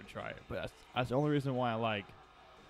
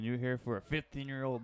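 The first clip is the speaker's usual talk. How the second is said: ordinary talk, nothing marked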